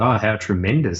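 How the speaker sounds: ordinary talk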